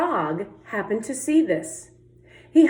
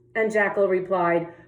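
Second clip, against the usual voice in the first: ordinary delivery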